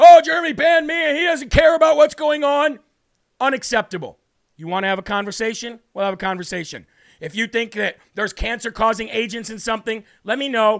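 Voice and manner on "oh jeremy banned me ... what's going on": very loud, high, shrill screaming rant. Retelling how a caller phoned his wife: imitating a caller screaming. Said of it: "started screaming at her".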